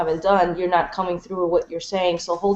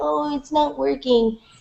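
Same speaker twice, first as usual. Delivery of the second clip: acted-out high, whingeing, whiny child's voice; 8 semitones higher than usual. Speaker retelling how he came back from playing in his room, imitating a whiny voice. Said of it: "he came back with this whiny voice".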